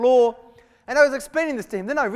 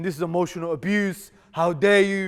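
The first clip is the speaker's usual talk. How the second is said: mock tearful crying in a man's voice. Retelling what a softly spoken man said when he stood up, imitating a man crying. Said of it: "he's crying".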